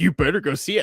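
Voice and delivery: put-on yelling. Imitating the other speaker yelling at them: imitating someone yelling. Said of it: "you're yelling at me like".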